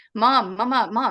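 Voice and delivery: loud, insistent, urgent cartoon-style calling, repeated. Retelling a voice heard at five in the morning calling for mom: imitating Family Guy-style urgent calling for mom. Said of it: "imitating that style of, of that cartoon".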